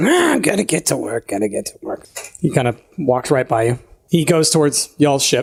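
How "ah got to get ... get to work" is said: put-on goblin voice, much lower. A game narrator voices a goblin coming up the stairs, in a goblin voice. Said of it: "wobbly goblin kind of like coming up".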